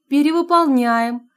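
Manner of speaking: teasing and light. [name] answers a caller's question over the phone, playful. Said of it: "игриво ответила Анфиса".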